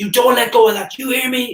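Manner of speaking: shrill, very high, acted-out screaming. Recalling the moment he sobered up and screamed at him: retelling a scream. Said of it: "I screamed at him like".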